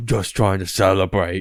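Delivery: very breathy put-on voice. Quoting a favorite film scene for a co-host, in a breathy voice impression. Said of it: "It's very breathy".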